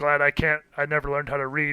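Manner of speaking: put-on laughing while talking. Describing a Viking burning a spell book, the speaker acts out his line, mock-laughing. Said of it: "sort of like laughing like".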